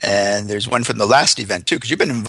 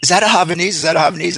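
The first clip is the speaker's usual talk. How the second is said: high, loud, acted-out yelling; 7 semitones higher than usual. Retelling a woman on the beach calling out about the dog: imitating a woman yelling. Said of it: "this woman yells".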